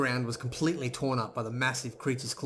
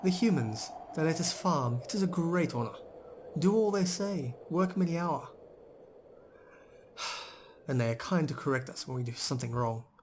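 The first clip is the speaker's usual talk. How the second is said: veiled sarcasm underneath; 4 semitones higher than usual. Narrating a story, voicing a farm worker answering what she does here: quiet and sarcastic. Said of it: "undercurrent of sarcasm in Boran's quiet voice".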